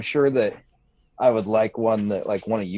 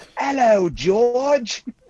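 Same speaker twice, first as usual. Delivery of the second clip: put-on very high-pitched voice with a strong British accent; 13 semitones higher, 4 dB louder than usual. Retelling how a daughter answers when greeted as Peppa, Peppa Pig British accent. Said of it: "she's using a British accent".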